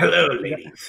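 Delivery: put-on evil old emperor voice. Joking about whether Palpatine's voice is always like that, give his pickup line in a Palpatine voice. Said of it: "is his voice always like that?".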